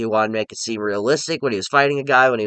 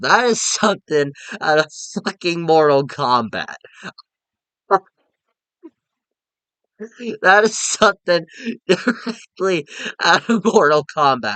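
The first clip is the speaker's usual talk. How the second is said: high voice, cracking up, laughing through words; 5 semitones higher, 3 dB louder than usual. Describing a movie death scene to listeners, laughing while talking. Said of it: "I'm sorry I'm laughing".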